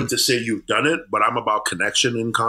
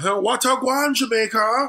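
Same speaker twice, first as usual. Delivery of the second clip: put-on watered-down Irish pirate Jamaican accent, higher; 13 semitones higher than usual. Mocking american comics doing a jamaican accent: imitating a bad american jamaican accent. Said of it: "watered down Irish pirate version of their accent".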